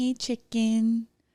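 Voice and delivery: put-on cutesy, babyish baby-talk voice. Complaining about how someone talks, imitating Craig's baby voice. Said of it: "when he talks in baby voice".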